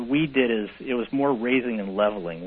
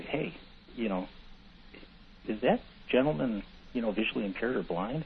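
hushed whisper, under the breath; 8 dB quieter than usual. Retelling how clients asked a partner about the speaker: imitating a client whispering. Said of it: "they'd whisper over to him and say".

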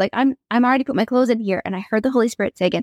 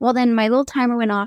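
ordinary talk, nothing marked

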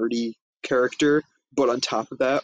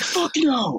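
play-acted, shrill, very high scream. Retelling a movie scene where the dad answers his daughter: imitating a screaming dad. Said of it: "screaming for no reason".

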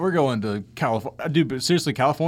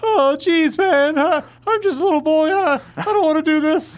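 put-on nervous cartoon boy voice, pitched much higher; 7 dB louder than usual. Taking turns doing Rick and Morty impressions with the other speaker: Morty impression. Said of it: "Can you do Rick and Morty impressions?".

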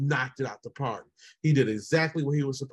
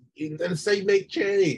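mock, high, hollered-out yell; 6 semitones higher, 4 dB louder than usual. Retelling how a wife yelled at the screen: imitating someone yelling. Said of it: "she yelled out".

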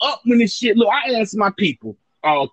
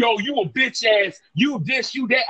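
ordinary talk, nothing marked

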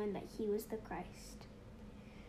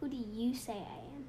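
ordinary talk, nothing marked

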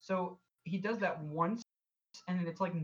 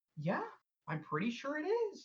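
very high, swooping, slow, sing-song movie-character voice; 9 semitones higher than usual. Retelling a movie's ending, imitating the movie character's voice. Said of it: "exactly in that voice".

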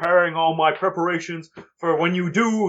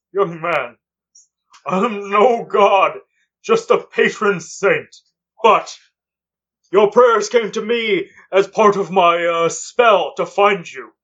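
put-on slow, unhurried, deliberate old man voice; 4 dB louder than usual. Voicing Santa answering a player who asks if he is God: Santa voice. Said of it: "Santa looks at you, goes".

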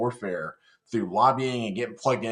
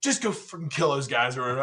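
pissed-off, fed-up officer's commanding tone; 3 semitones higher than usual. Retelling an order from the platoon leader mid-firefight: imitating an angry officer. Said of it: "He was so pissed".

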